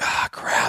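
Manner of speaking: frustrated, fed-up, whispered grumbling mutter. Retelling the cameraman losing the deer on camera: imitating frustrated muttering. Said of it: "You can see the frustration".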